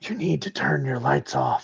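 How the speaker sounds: whispered male voice. Voicing a man whispering over the radio in a scene: whispered male voice on the radio.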